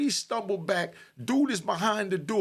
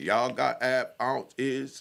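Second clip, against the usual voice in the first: very low, slow, dragged-out lazy drawl; 8 semitones lower than usual. Telling a story, speaker imitates how AV talks, slowly. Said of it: "He talks so slow".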